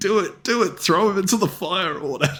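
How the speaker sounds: mock high-pitched screaming. Retelling a Lord of the Rings scene, a guy urging: imitating someone screaming. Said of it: "This guy over here is screaming".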